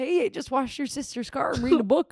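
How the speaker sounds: put-on Minnesota accent. Quoting what Mister Van Sturkson says, in Mister Van Sturkson's little Minnesotan accent. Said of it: "He's got his little Minnesotan accent".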